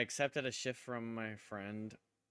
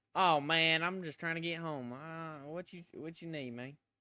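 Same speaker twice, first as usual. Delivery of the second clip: heavy put-on country drawl, slow and loud; 7 semitones higher, 5 dB louder than usual. Showing how to talk to someone so they leave you alone: put-on thick country accent. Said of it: "I don't think the voice really fits me".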